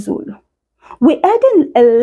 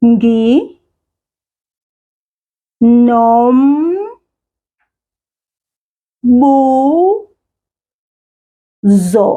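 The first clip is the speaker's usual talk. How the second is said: nginombuzo slow, syllables separated, bu drawn out. Saying a word for listeners to repeat after, slow, syllable by syllable. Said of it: "I'm going to say it slowly".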